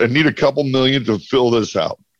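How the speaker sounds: usual speaking voice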